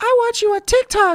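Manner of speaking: put-on very high, loud, tiny little kid voice. Retelling what a little kid said to the speaker, imitating a little kid's voice. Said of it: "that little kid voice".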